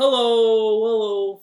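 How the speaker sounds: very loud, booming, stretched-out delivery. A leader guiding a group to say hello as low as they can. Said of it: "Let's say hello as low as we can".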